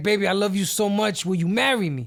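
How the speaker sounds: put-on heavy, laid-on, super strong New York accent. Retelling a man proposing to a woman at the gym: super New York accent. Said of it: "Super New York accent too".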